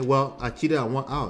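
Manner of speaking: normal talking voice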